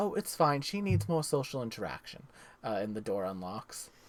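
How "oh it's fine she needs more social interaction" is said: mother-like voice. Voicing a mother answering the door buzzer: motherly voice. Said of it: "a motherly voice".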